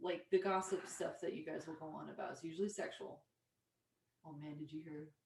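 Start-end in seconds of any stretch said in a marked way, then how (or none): 4.2-5.1 creepy, hushed, very quiet gossiping voice. Imitating how men gossip, the speaker uses a creepy voice. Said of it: "creepy voice, by the way".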